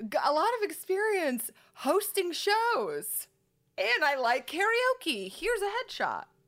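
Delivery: high, slow, eager tone.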